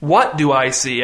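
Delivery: ordinary delivery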